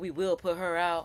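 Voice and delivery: ordinary talk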